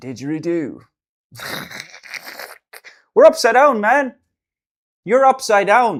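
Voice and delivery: laughing mock Australian accent.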